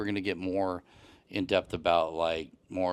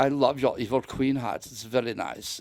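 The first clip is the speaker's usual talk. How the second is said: put-on German accent, a bit high; 6 semitones higher than usual. Retelling what a German tourist said in the bathroom, in a Dieter from Sprockets voice. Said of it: "he totally sounded like Dieter from Sprockets".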